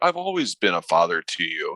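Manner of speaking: acted-out pleading, swooping sing-song voice. Retelling a film villain's plea to the hero: imitating a character pleading. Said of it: "pleads, quote".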